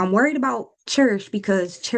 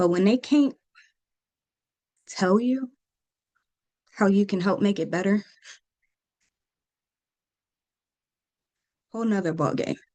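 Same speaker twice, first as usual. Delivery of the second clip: trying not to cry, fighting back tears. Speaking about a child in a hospital bed, the speaker holds back tears. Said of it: "I'm trying not to cry".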